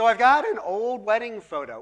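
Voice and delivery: voice cracking. Speaking to the group about a photo guessing game, voice cracking. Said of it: "my voice cracked".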